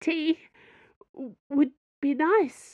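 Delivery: small, high, meek, timid voice. Madame Sue answers the Cardinal in a small voice. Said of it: "managed in a small voice".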